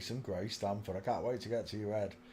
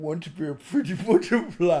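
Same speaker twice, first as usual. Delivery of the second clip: cracking up, high and very loud throughout; 7 semitones higher, 11 dB louder than usual. Speaker tries the line again after failing to say it, laughing while talking. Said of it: "I can't do it without laughing".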